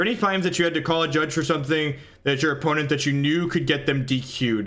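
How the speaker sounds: plain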